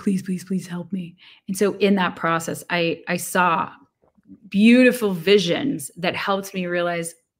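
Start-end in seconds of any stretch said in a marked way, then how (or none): 0.0-1.2 mock pleading, acted-out begging, faster. Recalling being told to meditate for an hour in an ashram; retelling own begging. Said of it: "I begged".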